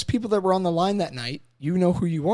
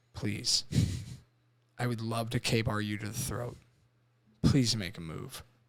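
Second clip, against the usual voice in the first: put-on cold, dead-eyed menacing tone, lower and quieter; 8 semitones lower, 9 dB quieter than usual. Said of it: "with these dead eyes going".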